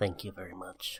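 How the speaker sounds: low, soft, pedantic nerd voice.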